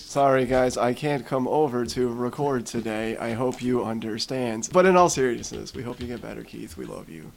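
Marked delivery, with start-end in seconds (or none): 0.0-4.7 slow robotic text-to-speech voice. Speaking for someone who can't come over to record, Microsoft Sam voice. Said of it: "He's talking with his Microsoft Sam voice".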